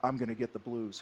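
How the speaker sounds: soft half-whisper, very close to the ear. Retelling what the guy sitting behind said in line: imitating a half-whisper. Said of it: "he whispers in my ear".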